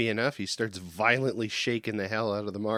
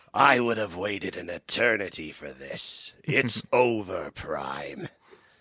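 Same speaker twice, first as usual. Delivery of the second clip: slow, drawn-out, deliberate character voice; 3 semitones lower than usual. Comparing an impression and switching to another character: Megatron voice. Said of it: "that just sounds more like Megatron".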